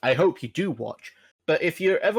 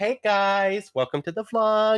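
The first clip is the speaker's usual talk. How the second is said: put-on cheesy, cringy young woman vlogger voice; 4 semitones higher than usual.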